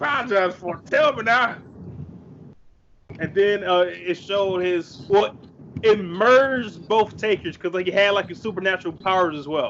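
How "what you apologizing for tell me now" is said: fast, taunting biker voice. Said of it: "his old voice saying".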